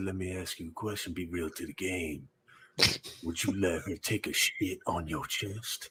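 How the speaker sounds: whispered voice. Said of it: "that whisper".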